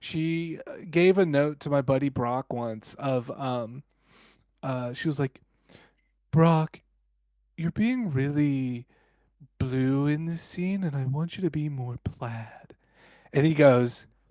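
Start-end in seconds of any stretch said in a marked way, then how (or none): 6.3-12.8 mock calm, soothing tone. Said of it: "she talked very calm and smooth like this".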